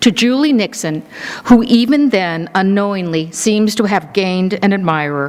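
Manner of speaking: ordinary talk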